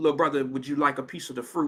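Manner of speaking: very gentle, soft, kindly tone. Retelling how a bodyguard offered fruit: imitating a gentle tone. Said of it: "real gentle".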